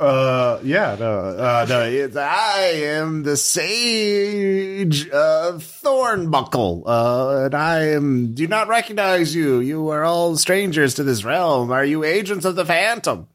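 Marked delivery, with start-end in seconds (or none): 2.2-13.2 put-on pitched-up goat voice, sage drawn out. Voicing a talking goat who questions strangers: talking goat voice. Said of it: "I have done a voice".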